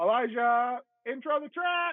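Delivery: put-on goofy, very high, silly shout. Describing how he cues a bandmate at practice, yelling in a funny voice. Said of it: "I'll like yell it in like this funny voice".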